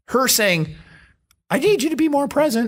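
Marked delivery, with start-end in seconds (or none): 1.5-2.7 nagging whine, pushed way up high. Acting out a woman complaining to an uninvolved partner, mock whining voice. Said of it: "That was my whining voice".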